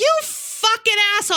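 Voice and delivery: shrill, very high, furious, acted-out yelling. Recalling a pickup driver cutting him off at a turn, retelling an angry yell. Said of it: "I'm like yelling".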